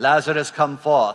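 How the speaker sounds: put-on British accent. Joking about how Jesus sounds in the movies: British accent. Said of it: "he does it with a British accent".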